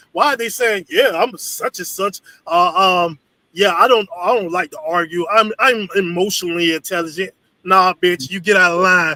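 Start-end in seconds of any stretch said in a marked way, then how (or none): none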